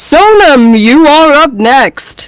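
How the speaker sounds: wizard voice in an announcing manner. A voice fills the space around the player, calling the next one up: bellowing wizard voice. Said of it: "a voice sort of bellows out from just really this entire space around you".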